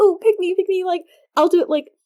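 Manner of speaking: very high, loud, happy, eager voice.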